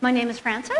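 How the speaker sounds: rising upspeak tune at the end of Frances. Showing the upspeak to avoid when saying your name: rising pitch on frances.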